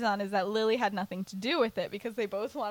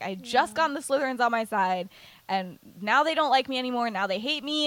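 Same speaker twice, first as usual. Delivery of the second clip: normal talking voice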